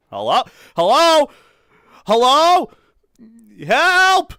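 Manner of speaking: shrill, booming, slow, high, drawn-out loud yell. Calling out hello and then help with the window open: yelling. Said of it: "I shouldn't yell that too loud".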